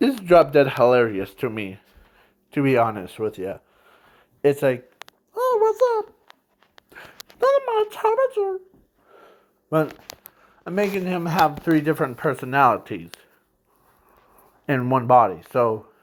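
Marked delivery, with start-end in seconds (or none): 5.4-8.6 put-on very high little-kid voice. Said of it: "his kid voice".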